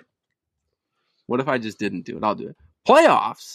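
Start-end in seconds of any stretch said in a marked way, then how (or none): 2.9-3.6 very high, pitched way up. Asked to imitate the famous playoffs rant: Jim Mora impression. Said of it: "Mine's not as good".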